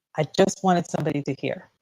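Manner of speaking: ordinary talk, nothing marked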